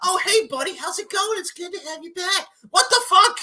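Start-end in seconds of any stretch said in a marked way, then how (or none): 0.0-2.5 high-pitched, jolly and friendly voice. Mocking how the owner greeted the returning wrestler: mocking jolly Mister Khan voice. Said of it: "and you're friggin' like".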